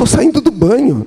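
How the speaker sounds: high, insistent protesting tone.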